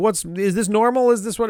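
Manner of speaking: put-on angry, demanding, high-pitched ranting outburst. Retelling a character's reaction at the aquarium, imitating someone pissed off. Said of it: "all pissed off".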